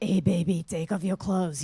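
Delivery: low, sultry, seductive bedroom voice. Retelling what she says to her partner at midnight: put-on seductive voice. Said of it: "when I do that voice".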